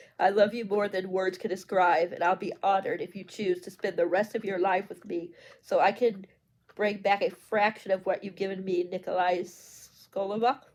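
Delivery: plain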